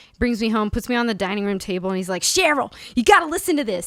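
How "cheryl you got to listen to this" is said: put-on thick, heavy New England accent, pitched up. Retelling what dad said after bringing the speaker home: thick New England accent. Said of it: "thick New England accent".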